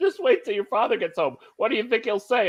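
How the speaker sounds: acted scolding while laughing. Retelling how mom scolded the kids: imitating mom scolding while laughing. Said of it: "trying to scold us, but laughing at the same time".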